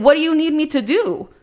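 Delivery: acted crying and screaming. Retelling an argument with Benny after being called a coconut: retelling crying and screaming. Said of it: "I was just crying and screaming at him".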